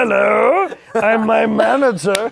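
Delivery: very loud, rough put-on voice, also loud and high. Joking that his team is just him: put-on manager voice. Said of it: "That was him slipping into his agent".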